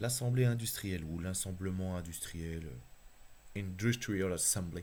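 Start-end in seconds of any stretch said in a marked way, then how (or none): 3.6-4.8 put-on affected English accent. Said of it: "Quel accent anglais, hein, je fais l'accent".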